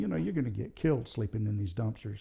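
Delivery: ordinary delivery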